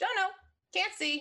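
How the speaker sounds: cute creature voice, very high and squeaky. A game master voices a creature NPC answering the players, in a cute creature voice. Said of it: "i love that voice".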